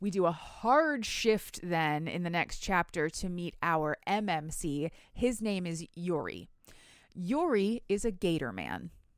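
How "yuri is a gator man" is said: plain, no-fuss, matter-of-fact with swooping pitch. Introducing a character from the book's next chapter: matter-of-fact delivery. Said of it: "how you just said that so matter-of-factly".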